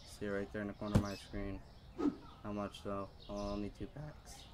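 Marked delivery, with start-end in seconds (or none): 3.3-4.3 voice breaking mid-phrase, slipping off its note. Streamer checks a price while shopping in a game, voice cracking. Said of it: "My voice just cracked there".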